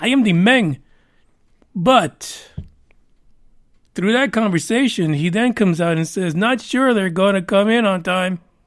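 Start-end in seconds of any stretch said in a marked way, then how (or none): 0.0-0.8 put-on Spanish accent. Quoting a man and giving him a put-on Spanish accent. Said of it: "I got to give him that Spanish accent".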